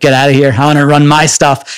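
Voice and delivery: plain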